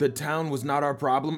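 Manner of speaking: yelling while running. Yelling to a companion while running through the forest: yelling while running. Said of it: "I'm yelling it at you as we're running".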